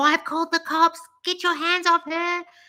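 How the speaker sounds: put-on high, yelled scream. Retelling screaming out a window at a man in the street: imitating own scream. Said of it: "I screamed out the window".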